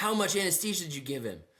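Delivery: high-pitched mock yelling. Retelling a mole removal as she turns to the nurse, imitating someone yelling. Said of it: "starts yelling at her".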